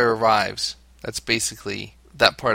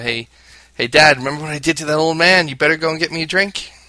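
bossy bullying voice, loud and pitched-up, taunting; 5 semitones higher, 5 dB louder than usual. Imitating a son acting as the bully: imitating a bully. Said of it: "He'll be the bully".

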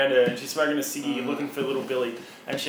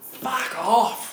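abrupt, startling, high-pitched shouted yell; 9 semitones higher than usual. Retelling a woman the speaker followed who suddenly yells: retelling a woman's yell. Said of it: "she just yells".

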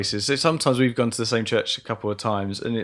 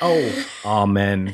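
mock low, flat monotone "amen"; 5 semitones lower than usual. Describing prayer meetings, imitating the old men's low monotone amen. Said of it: "all lower our voices and go very monotone".

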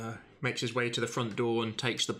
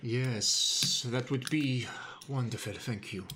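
put-on gentle Russian accent. Doing a woman character's accent in the scene, in a soft russian accent. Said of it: "I've got to do her accent".

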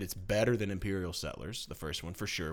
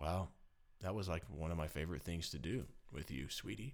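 mock sad voice, quieter; 3 semitones lower, 10 dB quieter than usual. Speaker retells his reply after she stopped playing games with him, imitating own sad reply. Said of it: "If you can hear the sadness in my voice".

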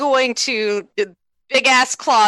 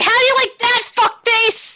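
very high, piercing, shrill scream; 13 semitones higher than usual. Voicing a character clawing into an enemy's back: screaming in character. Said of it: "She's gonna scream".

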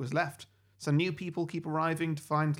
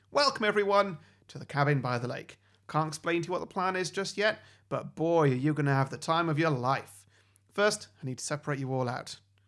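ordinary delivery

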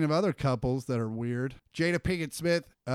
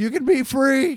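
put-on drunk scream, higher and louder; 11 semitones higher, 9 dB louder than usual. Retelling a drunk roommate yelling into sewers: imitating Anthony screaming. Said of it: "was screaming into the fucking sewers".

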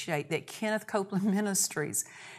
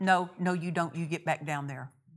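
put-on quiet muttering under breath; 3 semitones lower than usual. Retelling a husband's words to fear in the doctor's office: imitating speaking quietly under breath. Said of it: "just quietly under my breath".

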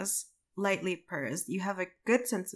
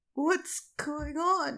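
high, put-on ancient old wizard voice; 8 semitones higher than usual. Going back to redo a line in a put-on old wizard voice. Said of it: "Your old wizard voice".

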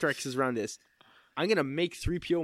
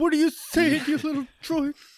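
very high-pitched, loud, raised put-on voice; 13 semitones higher, 6 dB louder than usual. Imagining how Uncle Leo would answer a droid: Uncle Leo voice. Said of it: "He'd be like".

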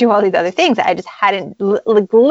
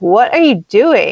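mock, acted-out teasing tone. Retelling how Canadians came out and teased them, acting out the mock-teasing. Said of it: "And they started teasing us".

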